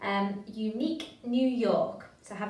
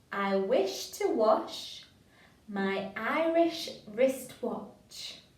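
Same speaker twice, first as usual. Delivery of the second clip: slow, deliberate, careful, each word placed. Leading listeners through a tongue twister together, nice and slow. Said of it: "Nice and slow".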